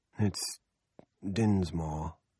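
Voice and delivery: dazed, absent tone. [name] correcting Carter on Mr. Dinsmore's name, in a dazed voice. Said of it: "[name] says in a dazed voice".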